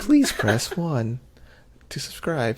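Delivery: polite, sing-song phone customer service voice. Asking listeners to subscribe after being teased about the voice: customer service voice. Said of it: "You got your customer service voice on".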